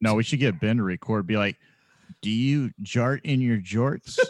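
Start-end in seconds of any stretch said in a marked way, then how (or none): 2.2-4.2 put-on advertisement-reading announcer voice. Suggesting a line for Ben to record: impression of Ben. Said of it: "That was a pretty good impression".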